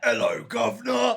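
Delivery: shrill, booming, very high, very loud fake British accent. Players recounting a large orcish gentleman they met, mock British accent. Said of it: "British orcish gentleman?".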